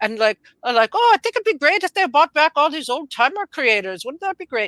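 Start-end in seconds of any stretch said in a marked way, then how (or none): 0.9-4.7 put-on Scottish accent, pitched up. Imitating Mark Millar talking online about comics: Mark Millar impression, Scottish accent. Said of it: "I can do a Scottish accent".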